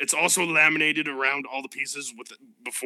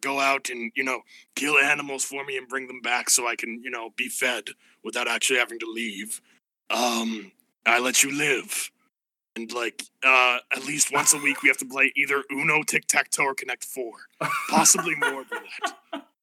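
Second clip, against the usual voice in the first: voice of a huge, giant dragon. In a game, a dragon from a cave sets its terms, giant blue dragon voice. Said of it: "and now there's a dragon, giant blue dragon that came out of the cave, / He pulls out little spectacles that he puts on the bridge of his nose. / I will spare your lives on one of three conditions. On".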